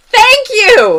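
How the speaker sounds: very loud, high yell. Retelling how a tiny but loud woman reacted after being set down, retelling a loud yell. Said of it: "Stop yelling at me!".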